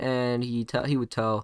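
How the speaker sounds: plain reading voice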